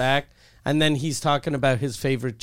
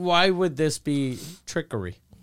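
normal talking voice

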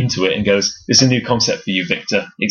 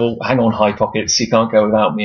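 usual speaking voice

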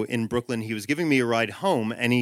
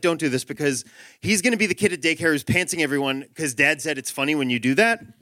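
plain

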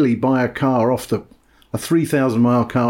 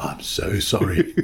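put-on contrite, funereal voice, lower and quieter; 5 semitones lower, 6 dB quieter than usual. Retelling a phone call from an apologetic bloke: imitating a contrite funereal voice. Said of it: "even more contrite, sort of funereal voice".

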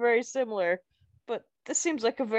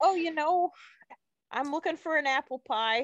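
sudden put-on Wisconsin accent, higher pitch; 5 semitones higher than usual. Greeted and asked what brings you to the town, you answer in a sudden Wisconsin accent. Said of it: "[name] is now from Wisconsin, suddenly".

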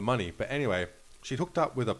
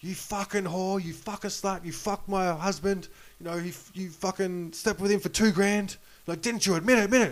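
put-on shrill, enraged, very high-pitched furious yelling; 10 semitones higher, 3 dB louder than usual. Retelling a wife confronting a waitress in a casino: imitating a wife yelling. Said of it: "this lady's yelling at her going".

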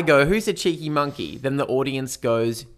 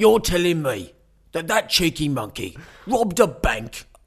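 slight cockney accent; 3 semitones higher than usual. Guessing how a line will sound: imagined Jason Statham cockney voice. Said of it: "my instinct tells me it's gonna be slightly cockney".

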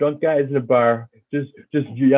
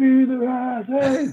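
high-pitched, yelled, taunting shout; 9 semitones higher than usual. Speaker retells a fan in the stands, imitating a fan shouting. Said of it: "then he starts just shouting it".

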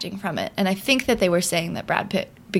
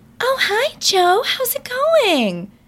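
mock girl voice, much higher; 5 dB louder than usual. Mocking how a male audiobook narrator voices a woman, mocking a narrator's girl voice. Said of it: "imitates, like, the girl voice".

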